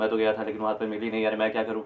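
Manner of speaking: words tumbling out at top speed. Imitating how a man used to talk back then: very fast speech. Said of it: "उसमें बहुत speed में बोलते थे।".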